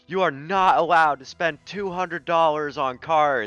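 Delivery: very high, sharp, shrill yell. Retelling how a girlfriend turned around at a store: imitating her yelling. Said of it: "she just turned around and yelled at him".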